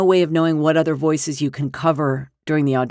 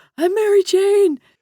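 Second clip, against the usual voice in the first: mock, very high-pitched, giddy cry; 3 dB louder than usual. Retelling hearing that the role landed: retelling giddy excited outburst. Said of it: "'cause I was nerding out".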